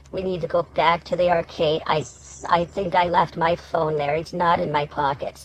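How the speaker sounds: plain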